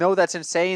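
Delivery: plain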